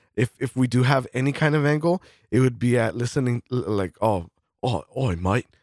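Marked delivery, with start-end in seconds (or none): 4.0-5.5 put-on Australian accent, much slower. Talking about appealing to a UK audience; Australian accent. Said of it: "I don't even know why I go Australian on that".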